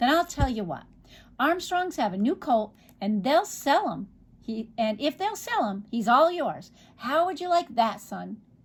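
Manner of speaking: plain reading voice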